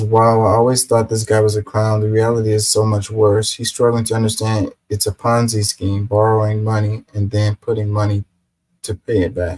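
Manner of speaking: normal talking voice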